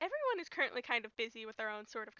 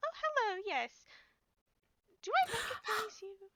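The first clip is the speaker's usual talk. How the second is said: grand society-lady voice, fancy and high; 9 semitones higher than usual. Voicing a lady who notices a player arriving: fancy lady character voice. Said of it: "you walk over to this very fancy-looking lady".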